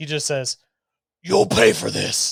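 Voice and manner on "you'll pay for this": huge, booming, rough, echoing voice. Voicing a character who fails a charisma saving throw in a game, in a booming echoey voice. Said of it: "in this like booming echoey voice".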